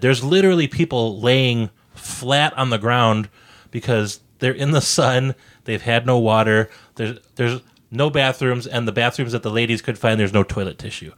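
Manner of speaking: usual speaking voice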